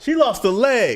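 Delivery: slow, high-pitched, dramatic delivery.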